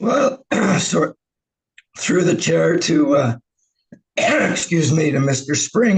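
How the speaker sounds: voice giving out. Starting to answer a question through the chair: losing voice. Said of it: "I'm losing my voice here".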